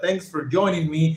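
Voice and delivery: ordinary talk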